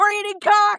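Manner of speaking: play-acted bellow, pitched way up very high. Telling a story about a meal with friends, retelling a bellow. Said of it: "And I bellowed out".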